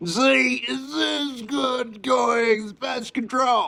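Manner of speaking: impression: very high, slow shouting voice.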